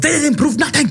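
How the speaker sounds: put-on very high, sudden German accent. Retelling how a man slips while denying his past: slipping into German accent. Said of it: "this German accent comes out".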